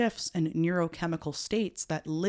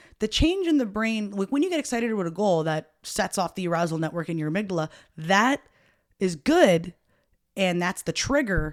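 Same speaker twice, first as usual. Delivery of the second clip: raised voice, close to a yell; 4 dB louder than usual. Speaking with headphones on while explaining a point, loud, almost yelling. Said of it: "sorry, I feel like I'm yelling".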